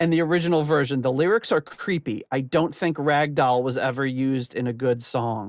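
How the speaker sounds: ordinary delivery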